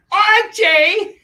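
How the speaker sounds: piercing loud shout. Channeling a sitcom character calling out a name: Edith Bunker voice. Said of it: "Edith Bunker from All in the Family".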